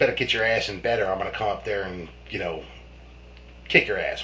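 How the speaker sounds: ordinary delivery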